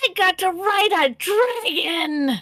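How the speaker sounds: excited high kobold voice. Narrating a game to the players, speak as the kobold: excited kobold voice. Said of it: "a very excited kobold voice".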